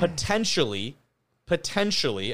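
"potentially" stressed, slow and rising.

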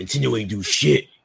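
put-on deep, scary voice. Repeating another player's line back: imitating a deep scary voice. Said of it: "who the fuck said that in deep ass scary?".

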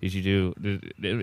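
hushed, halting half-whisper under the breath, breaking off. Retelling asking the cousin a question at the party, retelling a half-whisper. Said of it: "I kinda whispered".

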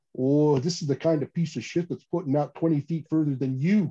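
put-on spoken in a Canadian accent. Telling a story where Dan answers a taunt: Dan's Canadian accent. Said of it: "in his Canadian accent".

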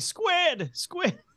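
mock high screaming. Recalling a scene where a dad gets locked in a submarine, retelling a scream. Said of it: "him start screaming".

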